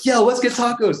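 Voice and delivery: very high, gushing, super excited tone. Telling how a roommate's friend suggested tacos, imitating a super excited friend. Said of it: "When someone's like super excited".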